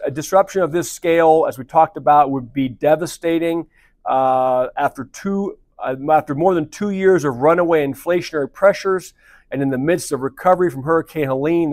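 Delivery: ordinary talk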